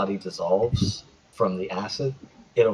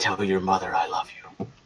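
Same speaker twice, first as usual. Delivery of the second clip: hushed whisper. A burning werewolf pulls a character close and whispers to them: whispering. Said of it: "and whispers to you".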